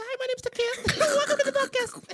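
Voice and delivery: drawn-out, very high, squeaky voice. Retelling mimicking a friend on the podcast: imitating a friend's high-pitched voice. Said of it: "Then I mimicked his voice".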